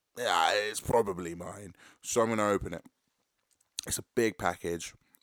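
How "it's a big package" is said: normal talking voice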